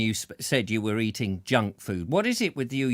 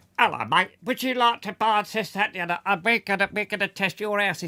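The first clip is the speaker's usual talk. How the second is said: silly, pitched-up put-on voice with quick patter; 8 semitones higher than usual. Speaker shows how he'll ring people up with made-up scams: funny scam-call voice. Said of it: "ring up in funny voices myself and just go".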